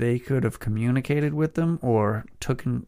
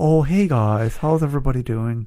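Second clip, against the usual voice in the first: put-on nerdy voice, louder; 5 dB louder than usual. Doing a voice that sounds like the brother from Napoleon Dynamite: voice like Kip from Napoleon Dynamite. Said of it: "Sounds like the brother from Napoleon Dynamite".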